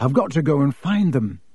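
ordinary delivery, nothing marked

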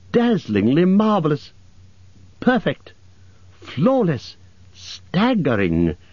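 high, swooping exclamation with big pitch swings. Bilbo answers the dragon, who rolled over to show himself; exclaimed aloud. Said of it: "exclaimed Bilbo aloud".

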